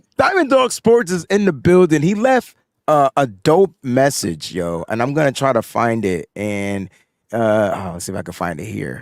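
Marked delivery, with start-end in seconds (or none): 0.2-2.0 raised, high-pitched, hyped-up announcing voice. Giving a shout-out to a new club member: high-pitched voice. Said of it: "I gotta go high pitch".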